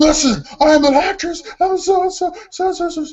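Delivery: acted-out fed-up fury boiling over, very high, drawn-out. Retelling an actress losing patience with a director: imitating someone getting angry. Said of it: "she's getting madder and madder".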